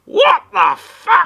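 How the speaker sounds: very high, very loud, shrill, shocked and startled shriek. Voicing a sick character leaping up at bad news: startled outburst. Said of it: "he leaps to his feet and goes".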